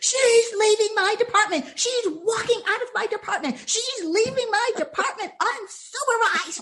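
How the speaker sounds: acted-out, furious, indignant, high-pitched angry rant. Retelling a buyer ranting as the speaker walked out: imitating someone ranting. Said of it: "the buyer was still ranting".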